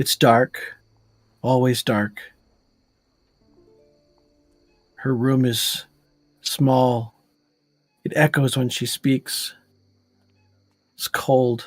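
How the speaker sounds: entranced, faraway voice. A narrator voices a woman staring off in a trance, entranced. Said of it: "almost goes into like a trance".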